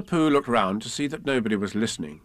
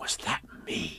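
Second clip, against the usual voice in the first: hushed, awed whisper full of wonder; 6 semitones lower, 12 dB quieter than usual. A narrator reads a character's question from a story, awed voice. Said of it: "in an awed voice".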